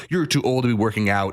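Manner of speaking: plain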